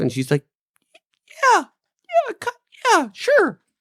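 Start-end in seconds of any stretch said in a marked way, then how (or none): 1.5-3.5 put-on woman voice, higher-pitched.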